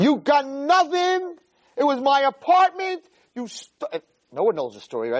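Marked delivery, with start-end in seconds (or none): 0.0-3.0 unhinged, very high-pitched, drawn-out yelling. Telling a story of a woman yelling at a young girl at a wedding, retelling a yell. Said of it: "this crazy lady starts to yell".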